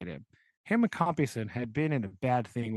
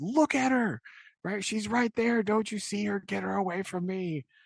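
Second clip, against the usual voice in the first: acted, shrill, very high-pitched screaming; 9 semitones higher than usual. Retelling how a haunted character screams at others: imitating a man screaming. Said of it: "later he starts screaming again".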